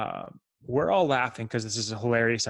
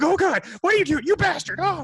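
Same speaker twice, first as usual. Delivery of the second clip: put-on very high-pitched, loud, shrieking old lady voice; 6 dB louder than usual. Retelling how an old lady reacted after being peed on: imitating an old lady screaming.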